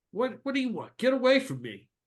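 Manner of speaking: angry, high, swooping, pissed-off female voice. Voicing Violet as a man on one knee asks if it's her: pissed-off Violet voice. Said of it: "the girl who's like pissed off".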